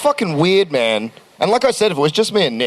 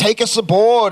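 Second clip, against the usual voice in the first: mock high, eager calling-out shout; 6 semitones higher than usual. Retelling seeing a light in the sky, imitating own past yelling. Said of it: "And then I started yelling".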